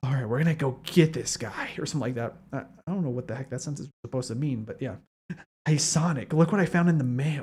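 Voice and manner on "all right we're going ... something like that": half-whispery, hushed stage whisper character voice. Reacting to a game, showing how Shadow always sounded to them: half-whispery Shadow voice. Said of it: "I always assumed it was like a more whispery voice".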